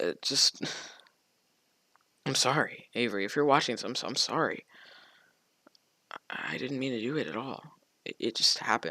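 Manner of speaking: whispered, near tears, stumbling and choked-up. Apologizing to an ex-partner after admitting a mistake, on the verge of crying. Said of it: "I'm about to cry, hold on".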